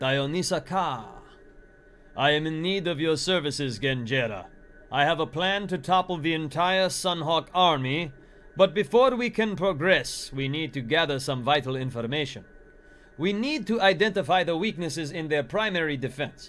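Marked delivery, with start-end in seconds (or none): 2.2-16.5 put-on speaking with a Middle Eastern sounding accent. Reading a character's lines aloud, trying a Middle Eastern sounding accent. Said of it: "They're a little more Middle Eastern sounding".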